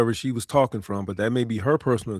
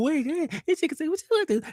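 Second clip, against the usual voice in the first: mock giggly voice, higher. Retelling how the other speaker giggled about a woman: imitating someone giggling. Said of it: "You all giggling".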